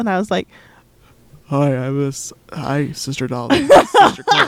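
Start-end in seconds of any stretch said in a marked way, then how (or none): 1.4-4.5 low, froggy, crackly, croaky head-cold voice. Retelling a phone call while sick: imitating own low croaky voice. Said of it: "froggly and crackly and stuff".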